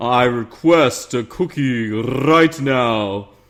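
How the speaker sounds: slow, put-on deep voice. Giving a viewer shout-out, saying the line he asked for: deep voice. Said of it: "He said just to do it in a deep voice".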